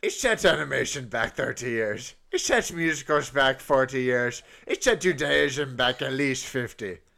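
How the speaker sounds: put-on pirate accent. Repeating a question, now saying it as a pirate, pirate voice. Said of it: "I'm going to say it as a pirate".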